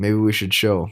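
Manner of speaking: silky, smooth, self-assured, seductive voice. Showing someone with sassy vibes how to say it: smooth, confident, seductive. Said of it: "you say it just like that. You say it smooth, you say it confident, you say it seductively".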